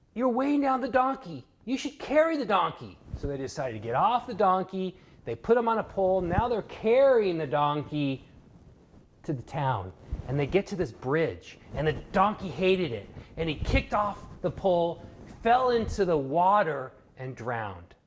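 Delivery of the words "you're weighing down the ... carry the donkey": high-pitched yell. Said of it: "someone yells".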